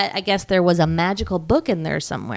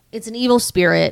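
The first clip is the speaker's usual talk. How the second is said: ordinary delivery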